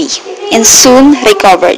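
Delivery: ordinary delivery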